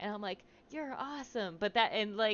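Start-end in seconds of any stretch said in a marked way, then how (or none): 0.7-1.6 soft, slightly high half-whisper, barely any voice. Retelling how she calmed a yelling friend: imitating her own half-whisper. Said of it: "so I just whispered the first thing".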